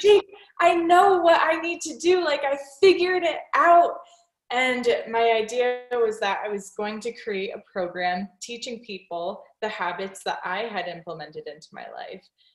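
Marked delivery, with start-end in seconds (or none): 0.0-4.0 very high, very loud, frantic, excited yelling. Retelling running out to the garage to tell his partner jake: retelling a frantic scream. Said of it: "screaming like a crazy person".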